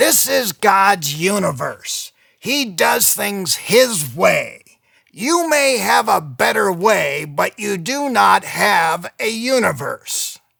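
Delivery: raspy, rough-edged voice. Quoting what J. Vernon McGee says, doing a raspy J. Vernon McGee voice. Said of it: "says this with his raspy voice".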